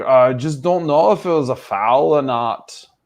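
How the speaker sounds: put-on English German accent. Retelling what Clattenburg said: Clattenburg's English German accent. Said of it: "in his best English German accent".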